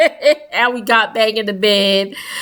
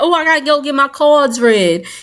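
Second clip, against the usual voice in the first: put-on New Orleans accent; 4 semitones higher than usual. Retelling what a woman said on a night out, in her New Orleans accent. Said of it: "in her New Orleans accent".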